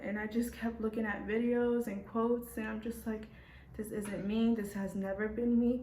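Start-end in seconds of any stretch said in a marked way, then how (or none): none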